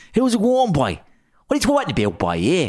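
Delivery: Irish Waterford accent. Asked to do his Waterford accent, the speaker talks in a Waterford accent. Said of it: "you do your Waterford accent".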